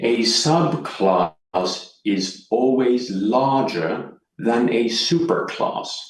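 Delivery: slow, deliberate, each word carefully laid out. Speaker repeats a point about subclasses for the audience, said slowly. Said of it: "Let's say that again slowly".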